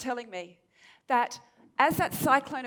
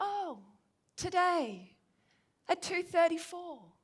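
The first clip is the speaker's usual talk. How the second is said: laid-back, unhurried island tone; 5 semitones higher, 4 dB quieter than usual. Retelling what a local woman said about a tsunami: imitating a relaxed island tone. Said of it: "her very relaxed island tone".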